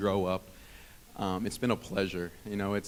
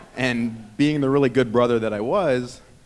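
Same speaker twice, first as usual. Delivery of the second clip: usual speaking voice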